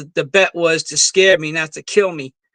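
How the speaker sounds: plain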